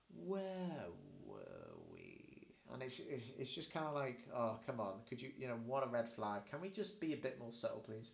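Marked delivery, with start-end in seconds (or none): 0.2-2.5 sinister villain tone, very low and swooping. Retelling a character speaking toward the clone Fives, imitating a sinister voice. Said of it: "he puts on this sinister voice".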